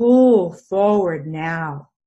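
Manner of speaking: loud, great booming voice. Retelling what a voice told him while he lay injured, in a great booming voice. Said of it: "This great booming voice".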